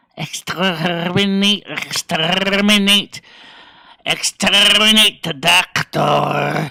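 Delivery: loud, very slow, every word dragged out. Answering a request to say exterminate: Dalek voice. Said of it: "Say exterminate".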